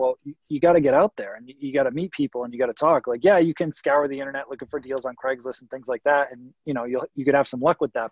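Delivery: ordinary delivery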